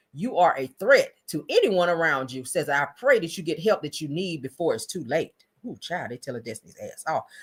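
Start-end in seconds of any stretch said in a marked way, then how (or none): none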